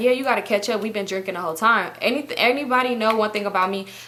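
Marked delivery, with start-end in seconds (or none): none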